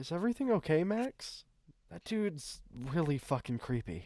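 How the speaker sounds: frightened, trembling voice. In an actual play game, a character speaks to Max, nervous and shaky. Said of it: "She's shaky and But I was she's too nervous. / She's nervous. / And she takes a step away, / nervous".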